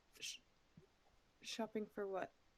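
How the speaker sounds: intimidated, whispered stammer. Voicing a cowed character answering a shopping invitation: much quieter voice. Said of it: "I'll ask that in a much quieter voice".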